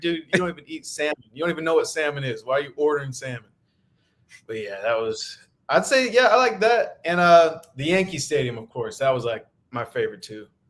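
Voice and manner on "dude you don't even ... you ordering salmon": usual speaking voice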